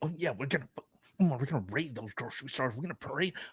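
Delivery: very quiet, hushed, barely-there voice. Imitating a woman in a video who had to get quiet: imitating someone getting quiet. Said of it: "she had to get quiet when she's like".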